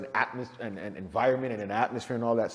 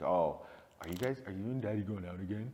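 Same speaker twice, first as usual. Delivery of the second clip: mock playful manner, lower and quieter; 4 semitones lower, 9 dB quieter than usual. Retelling what a six-year-old daughter asked: imitating a playful tone. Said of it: "playful manner".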